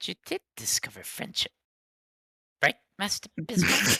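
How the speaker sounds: quiet, hushed whisper. Narrating a role-playing scene, speaker voices Jekyll whispering to Master Bismarck. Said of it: "he's whispering. He's like".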